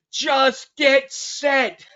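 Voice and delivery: high, slow, drawn-out barking like a drill sergeant. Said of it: "He's like".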